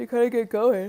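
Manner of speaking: words said through a yawn. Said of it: "Sorry, I'm yawning".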